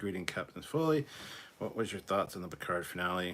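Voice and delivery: normal talking voice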